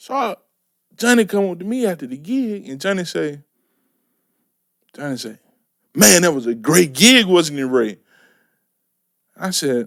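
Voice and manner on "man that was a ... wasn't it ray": normal talking voice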